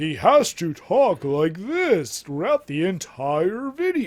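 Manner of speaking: very loud, booming, pretentious, annoying put-on announcer voice. Speaker mocks a pretentious video narrator, imitating his annoying announcer voice. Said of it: "that annoying announcer voice".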